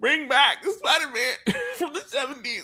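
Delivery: very high-pitched strain caught in the throat. Imitating the other speaker's demand for the old show: imitating Kyle's throaty strain. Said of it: "Did you hear it in his throat?".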